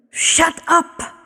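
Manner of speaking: hissed, high-pitched. Narrator reads a voice speaking to Prickling Needles, hissing voice. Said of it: "The voice hissed to Prickling Needles".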